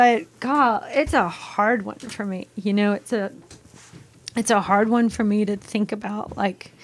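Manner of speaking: speaking through tears. After the other speaker notes they are choked up, crying while talking. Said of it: "I am crying".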